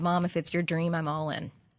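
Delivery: put-on flat deadpan delivery. A mother retells her eight-year-old son's answer about moving, retelling a deadpan reply.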